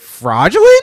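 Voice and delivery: loud, heavy stress on each word. Complaining about how Karens talk, imitating one in a raised, emphatic Karen voice. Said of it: "she sounds like this?".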